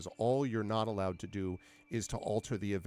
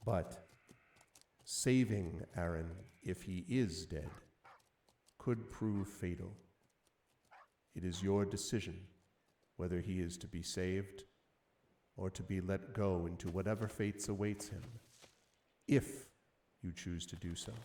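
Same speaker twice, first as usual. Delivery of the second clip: very quiet, softly spoken hushed voice; 4 dB quieter than usual. A game master voices an oracle speaking so only one player hears, very quiet. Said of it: "And it says very quietly".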